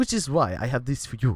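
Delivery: put-on sustained Russian accent. A narrator voices Rebellion handing over a bottle of pills, Rebellion, Russian accent. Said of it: "doing the Russian accent".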